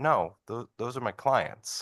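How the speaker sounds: dry delivery, a touch high. Quoting someone's answer to a question the speaker just asked, retelling a deadpan reply. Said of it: "Jill just deadpans as she does and goes".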